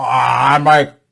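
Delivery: put-on slurred, thick speech. Saying a line as Larry Flint, in his stroke voice. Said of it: "I'll do it in his voice".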